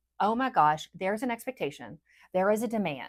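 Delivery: ordinary delivery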